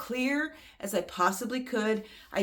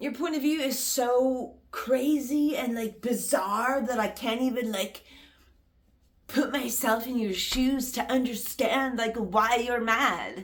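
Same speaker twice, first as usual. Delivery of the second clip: mock patronising tone, slow condescending drawl; 3 semitones higher than usual. Retelling how the other person talks to the speaker: imitating her condescending voice. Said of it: "I'm doing that voice because that's how it makes me feel".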